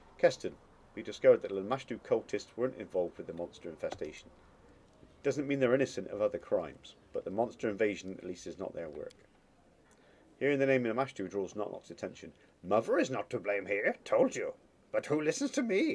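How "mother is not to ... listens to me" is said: swooping, terrible goblin voice swinging all over. Voicing Knock-Knock, who reacts to hearing the name Lamashtu, Knock-Knock's goblin voice. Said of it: "That's a terrible impression".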